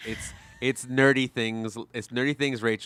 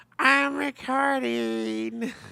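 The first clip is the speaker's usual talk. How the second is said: squeaky, very high, creaky little alien creature voice; 14 semitones higher than usual. Teasing the other speaker about their recording voice, small green alien creature voice. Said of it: "like a small green alien creature".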